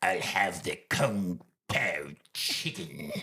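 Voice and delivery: low, hushed character voice. Retelling a man ordering at a restaurant counter in full character, Palpatine voice. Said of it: "Palpatine voice goes".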